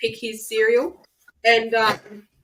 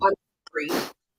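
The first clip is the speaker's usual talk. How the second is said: imitated grudging tone with attitude. Retelling a child told she forgot to say sorry: imitating an apology with attitude. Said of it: "That's the attitude I get".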